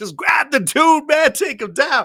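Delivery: loud yelling, pitched high.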